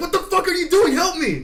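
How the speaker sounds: high-pitched, loud, panicked yelling.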